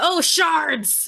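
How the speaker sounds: very high, shouted in-character exclamation. Voicing Rika after a companion falls off a cliff: shouting in character. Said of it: "Rika shouts out".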